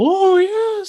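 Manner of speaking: very high, deliberately bad spooky voice. Describe Paul Bearer's introduction on WWF Superstars, doing a terrible Paul Bearer impression. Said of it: "that was a terrible Paul Bearer".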